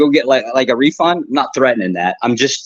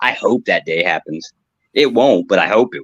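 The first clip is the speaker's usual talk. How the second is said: ordinary delivery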